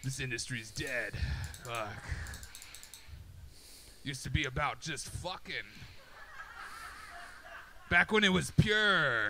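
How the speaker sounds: put-on gravelly, drawn-out old man voice. Speaker imagines what grizzled porn stars said: grizzled porn star voice. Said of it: "grizzled porn stars ... I got to do a voice".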